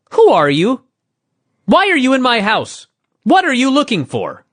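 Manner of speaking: exaggerated, overdone sing-song, over-inflected rising tune. Telling a story, voicing an old man questioning the intruder in his house, exaggerated inflection. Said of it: "Too much inflection".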